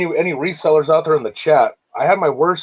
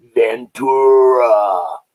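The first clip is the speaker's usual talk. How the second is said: scary, deep, slow, drawn-out calling of a name; 4 semitones lower, 4 dB louder than usual. Describing a lady's voice by quoting the Ace Ventura landlord. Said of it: "when his landlord says".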